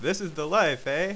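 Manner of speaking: ordinary delivery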